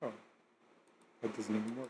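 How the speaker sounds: very quiet, barely audible, confused, puzzled murmur. Failing to craft a bow at a crafting table, confused. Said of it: "(Original Audio, *confused*)".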